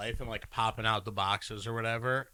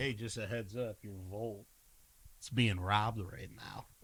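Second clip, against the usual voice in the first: mock-slick, smooth, put-on smooth-talker voice; 5 dB quieter than usual. Describing a guy always on the phone, imitating him: mock-slick smooth talk. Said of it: "just kind of being slick".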